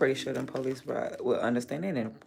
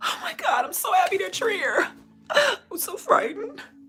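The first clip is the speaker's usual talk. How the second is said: forced teary fright, very high, shrill and loud; 10 dB louder than usual. Parodying someone putting on fake tears, in mock tearful fear. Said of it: "Gotta force down the tear".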